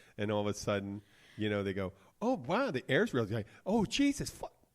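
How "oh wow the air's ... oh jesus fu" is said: put-on tourist voice, very high and swooping pitch. Redoing an impression of a Keys resident stepping off a plane into snow: impression of a Keys resident. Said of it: "I did my impression yesterday of a Keys resident".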